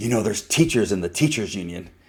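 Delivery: hushed, confiding stage half-whisper, close to the ear. Retelling what a teacher said into his ear: imitating someone half-whispering. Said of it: "she whispers in my ear".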